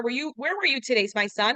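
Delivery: normal talking voice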